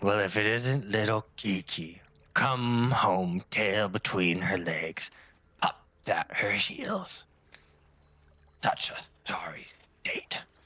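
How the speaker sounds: distant voice ringing out and echoing back. Game master voicing a voice heard as the party reaches the deck: echoing voice. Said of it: "a voice um, sort of echoing out".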